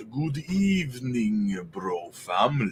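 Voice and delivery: hushed, hammy, cheesy horror-movie vampire voice. Greeting the bro family in a cheesy vampire voice. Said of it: "in my best cheesy vampire voice".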